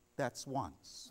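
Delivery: quiet, calm, soft, hushed whisper. Retelling a man's story of what his wife told him, said quietly. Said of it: "My wife told me quietly".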